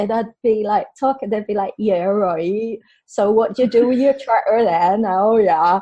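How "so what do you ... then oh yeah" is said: put-on rural country Somerset accent. Retelling how you would fall into the accent by mistake, in a country Somerset accent. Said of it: "fall into like this country Somerset accent".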